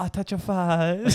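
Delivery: put-on very high, slow baby talk voice. Imitating a man on a tram talking to his kid: imitating a man's baby talk. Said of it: "we're just doing him".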